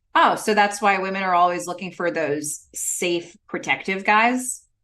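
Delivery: normal talking voice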